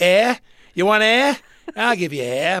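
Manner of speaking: high, loud, put-on sneering voice.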